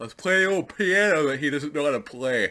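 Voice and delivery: words stretched out while talking mid-yawn. Early in the morning before work, the speaker talks while yawning. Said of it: "Sorry for the yawning".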